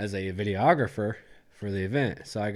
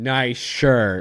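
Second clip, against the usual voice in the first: mocking, sarcastic, very loud; 3 semitones higher, 10 dB louder than usual. Retelling how everyone reacted to a shirt: imitating sarcastic praise. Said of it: "everyone sarcastically loved it".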